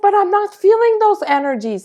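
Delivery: high, doubtful, unconvinced voice. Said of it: "perhaps you're saying".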